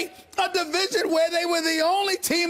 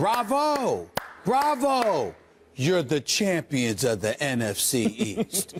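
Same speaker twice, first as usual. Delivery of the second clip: low, slow, sarcastic mock congratulation. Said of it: "let me look into the camera at those Redskins players".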